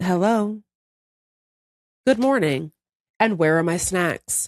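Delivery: put-on pet cat voice. Retelling the cat sitting there after waking everyone: voicing the cat. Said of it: "she would just be sitting there like".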